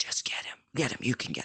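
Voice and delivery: quiet, breathy whisper under the breath. Retelling a standoff, voicing one of a group, retelling a whisper. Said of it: "one of them's like whispering like".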